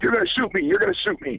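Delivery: mock very high, frantic, rattled, panicked pleading, losing it. Retelling a man in a car losing it at him, acting out his panic. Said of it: "losing it on me".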